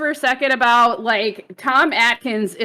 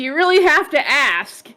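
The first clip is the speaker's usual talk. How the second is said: plain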